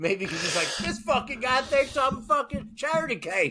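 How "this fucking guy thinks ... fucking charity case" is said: put-on rural Southern twang, pitched up. Imagining the thoughts of a man the speaker held a door for, in a redneck voice. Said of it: "I just did a redneck voice".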